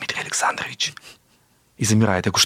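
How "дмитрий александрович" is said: put-on apprehensive, wary whisper, much quieter. Retelling a phone call from a patient, imitating an apprehensive whisper. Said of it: "И таким шепотом говорит мне".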